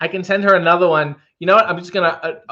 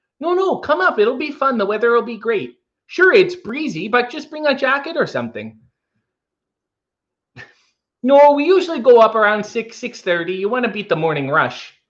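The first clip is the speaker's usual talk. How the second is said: put-on Minnesota accent, pitched up; 6 semitones higher than usual. Asked if they can do one, the speaker tries a Minnesota accent. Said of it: "can you do a Minnesota accent?".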